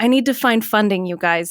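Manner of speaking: plain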